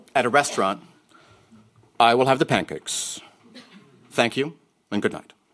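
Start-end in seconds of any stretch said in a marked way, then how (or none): 2.0-5.3 put-on old-time Mid-Atlantic radio announcer voice. Retelling the father ordering at a restaurant: imitating dad's mid-Atlantic radio voice. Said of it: "the mid-Atlantic radio voice he replaced it with".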